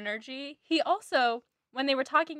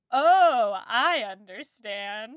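loud, put-on sarcastic show of understanding; 5 dB louder than usual. Retelling what Mrs Phillips says after being offended: imitating Mrs Phillips, sarcastic. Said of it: "But I read it as sarcastic".

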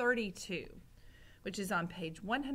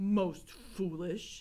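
muttered, mumbled; 3 dB louder than usual. He lifts the cover off his plate after a shouted exchange, muttering. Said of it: "muttered Gregory".

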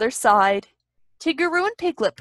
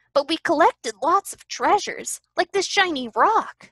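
bright, pitched-up delivery; 5 semitones higher than usual. One of the friends speaks to the others after their search, brightly. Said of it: "Piglet declared brightly".

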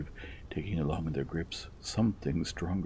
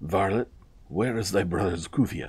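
furious, wrathful, commanding tone with raised voice; 3 semitones higher, 8 dB louder than usual. Hussein strides over to the guilty man about the missing headdress, a wrathful demand. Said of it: "he demanded".

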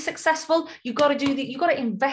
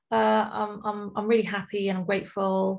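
mock half-hearted tone, lower and slower; 5 semitones lower than usual. Speaker warns against taking affirmations lightly, doing a mock half-hearted affirmation. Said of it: "I don't mean sit there saying".

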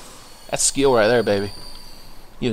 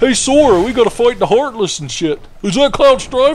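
high, loud, goofy cartoon voice. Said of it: "It's my goofy impression".

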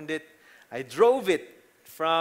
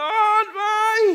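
very high, very loud, shrill shout; 8 dB louder than usual. Retelling hitting a post with a new car: imitating own shout. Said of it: "And I shouted".

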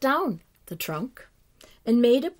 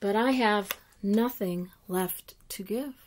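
plain reading voice

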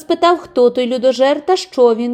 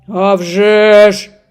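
rough, gruff, coarse ogre voice; 3 semitones lower, 5 dB louder than usual. A narrator reads a tale; the ogre answers the cat in a rough voice. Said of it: "відповів людожер грубим голосом".

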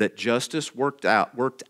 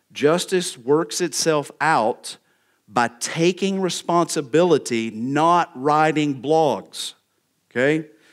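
drawn-out, slow, pointed angst with raised pitch. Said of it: "Little angst there".

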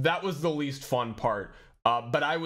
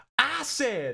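very high-pitched, sloppy, acted drunken screech; 10 semitones higher than usual. Retelling a drunk eighties wrestler telling a story, imitating his drunk scream. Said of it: "he just screamed".

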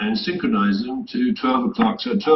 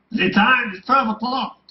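put-on very high, very guttural German-accented clock voice; 11 semitones higher than usual. Retelling a german clock announcing the time at night: guttural german accent. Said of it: "in a very guttural German accent".

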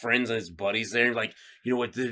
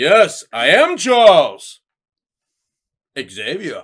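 very loud, high, declaring announcing voice; 5 semitones higher, 13 dB louder than usual. Running through X-Men voices, the speaker does Charles: Patrick Stewart impression. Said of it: "I can do Patrick Stewart saying yes".

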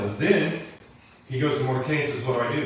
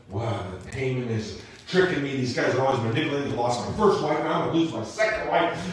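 usual speaking voice

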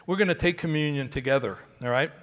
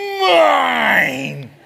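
very loud, creaky, drawn-out, rough demonic roar; 9 semitones higher, 10 dB louder than usual. A child clutches something, turns away, and says mine in a demonic voice. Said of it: "with the most demonic voice you've ever heard".

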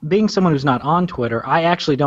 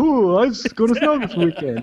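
comedic delivery, pitched higher; 7 semitones higher than usual. Retelling a running joke about snow, said in a funny way. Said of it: "I say it in a funny way".

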